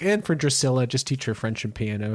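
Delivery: ordinary talk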